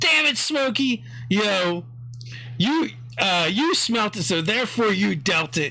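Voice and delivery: dog character voice. Voicing one of the dogs at the door, teasing another: voicing a dog character. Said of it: "so one of them goes".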